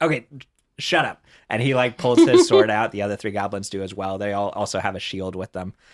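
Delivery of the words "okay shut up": momentarily flustered, caught-off-guard tone. A goblin leader snaps back after a pun, flustered. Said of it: "he like gets like flustered for a second".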